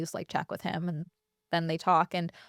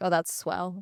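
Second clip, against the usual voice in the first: put-on play-acted, heavily dripping teenage-style sarcasm. Retelling a habitual teenage remark: imitating own sarcastic tone. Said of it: "very sarcastically all the time".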